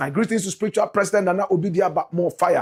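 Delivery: ordinary delivery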